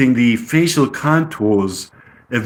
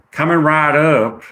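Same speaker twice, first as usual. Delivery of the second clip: put-on easygoing, relaxed Southern accent. A server answering a breakfast order, voicing Penelope with a southern accent. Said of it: "So Penelope gets a southern accent".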